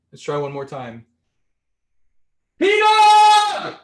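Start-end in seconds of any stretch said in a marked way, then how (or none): 2.6-3.6 booming, shrill, very loud, high drawn-out yell. Calling down to her so she can take the phone, second try: loud yell. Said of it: "I'm gonna yell pretty loud".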